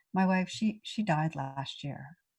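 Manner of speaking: ordinary talk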